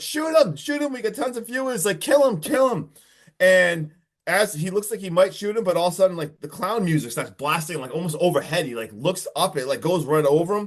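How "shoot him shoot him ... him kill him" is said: very high, shrill, pitched-up yelling. Retelling a movie scene where the cameraman urges a shooting: imitating someone yelling. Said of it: "he's literally yelling at Char-, Charles".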